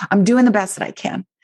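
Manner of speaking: defiant, defensive, pushing-back tone. Showing the wrong way to say it to yourself: defensive pushing-back tone. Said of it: "not pushing against some outside authority".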